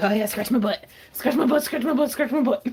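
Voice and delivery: loud voice speaking as a dog. Voicing a dog getting its butt scratched: voicing the dog's thoughts. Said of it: "He's like".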